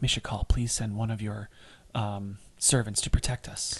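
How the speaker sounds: hushed, whispered under the breath. A character grasps his holy symbol and prays, whispering. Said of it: "Dave grasps his holy symbol and whispers".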